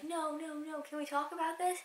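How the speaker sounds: play-acted, high, frightened, scared pleading. Retelling the lady's reply when staff threatened to call police, imitating a scared plea. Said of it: "she gets really scared".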